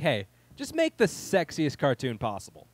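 ordinary delivery

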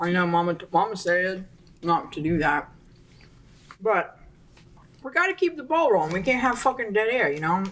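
speech muffled by chewing, mouth full. Podcast co-host keeps talking to avoid dead air, talking with mouth full. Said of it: "I'm talking with my mouth full".

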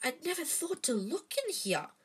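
whispering excitedly. Dashing back with an enormous book, she tells her two companions in an excited whisper. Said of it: "she whispered excitedly".

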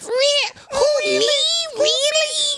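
very slow, very high, drawn-out mocking, teasing voice. Imitating a friend's surprised reply, mocking her voice. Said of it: "I don't sound like that".

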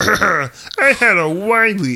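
put-on puppet frog voice. Starting to read a bottle aloud: Kermit the Frog voice. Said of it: "that's Kermit the Frog".

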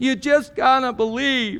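mocking put-on whine, high-pitched. Imitating the voice heard all over Hollywood, mock-whiny voice. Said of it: "that's the whiny voice I hear whenever I hear that".

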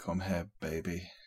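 creepy, unsettling put-on voice. Answering what the character says while braiding an orc's hair: creepy voice. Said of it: "something probably really creepy".

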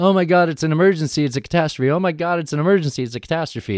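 mocking, high, put-on panicked babbling. Mocking the Democrats by imitating them, in mock panic. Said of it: "I'm making fun of them".

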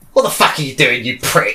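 gruff, rough-edged voice. Imagining a dog talking back, in a gruff voice. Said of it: "You just hear a gruff voice say".

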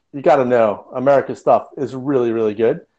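put-on cavalier, breezy, confident tone. Retelling what a former deputy director said about hacks: imitating a cavalier, confident tone. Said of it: "he said quite cavalierly".

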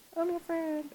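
very high, talking-to-animals pet voice. Showing how they talk to animals until they become friends: put-on pet voice. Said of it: "With my pet voice".

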